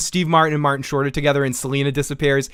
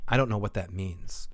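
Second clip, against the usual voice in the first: mock flat, expressionless, very quiet, low deadpan; 6 semitones lower, 11 dB quieter than usual. Recounting an elevator exchange, retelling a woman's deadpan reply. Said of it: "real deadpan".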